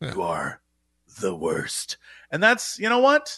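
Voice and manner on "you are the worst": very low, very slow murmur. Imitating an internet commenter's insult, in an Alec Baldwin-like voice. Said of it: "was that Alec Baldwin?".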